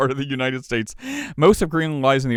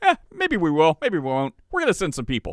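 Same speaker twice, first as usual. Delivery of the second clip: put-on nonchalant sing-song politician voice; 4 semitones higher than usual. Acting out Trump brushing off an objection: imitating nonchalant Trump. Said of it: "so nonchalant about it".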